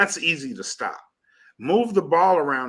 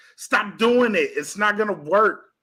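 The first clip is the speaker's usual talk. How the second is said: put-on shouting, pitched up; 8 semitones higher than usual. Retelling how they react during games, imitating yelling at the tv. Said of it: "I'm yelling at the T V".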